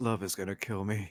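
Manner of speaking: quiet whisper, as if to oneself. Voicing a character lifting his head from the sand after a wipeout: whispering to himself. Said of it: "just whispers to himself".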